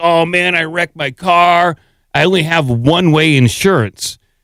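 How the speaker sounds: ordinary delivery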